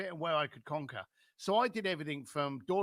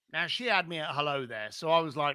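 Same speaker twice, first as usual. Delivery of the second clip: ordinary talk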